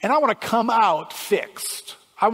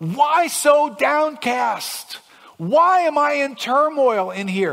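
high, loud, slow despairing cry. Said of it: "the guy in Psalm forty-two".

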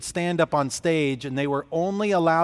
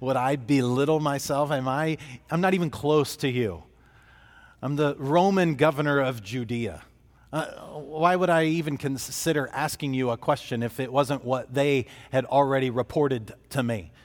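ordinary delivery

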